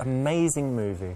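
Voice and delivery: loud, over-the-top, sarcastic gushing praise. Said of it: "He sounds so sarcastic".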